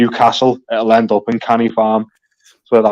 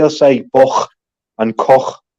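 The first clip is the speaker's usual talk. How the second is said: strong inner-city Liverpool accent, hard k sound; 2 semitones higher than usual. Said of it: "that's strong K".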